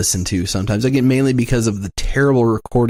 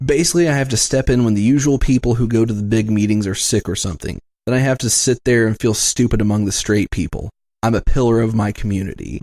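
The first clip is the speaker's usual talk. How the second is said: usual speaking voice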